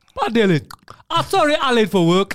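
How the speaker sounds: very loud, high put-on voice, belted out. Joking about retelling a story of Poseidon on stage: put-on Poseidon voice. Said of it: "I'm gonna change my voice too".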